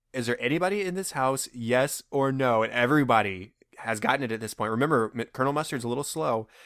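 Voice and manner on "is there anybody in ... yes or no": ordinary talk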